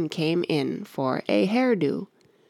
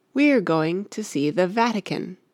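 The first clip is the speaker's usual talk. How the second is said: plain reading voice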